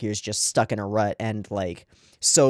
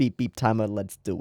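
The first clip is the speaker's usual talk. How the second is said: odd put-on accent, half New York, half Russian; 3 dB quieter than usual. Starting a timer for a reaction video, in an odd half New York, half Russian accent. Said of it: "I don't even know what that accent was".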